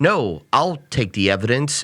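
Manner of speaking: normal talking voice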